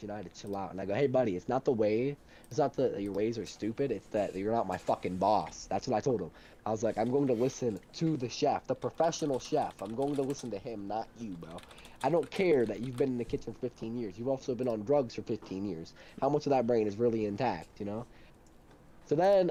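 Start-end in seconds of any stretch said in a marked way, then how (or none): none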